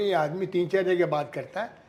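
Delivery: normal talking voice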